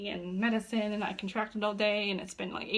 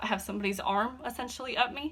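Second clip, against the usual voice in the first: ordinary delivery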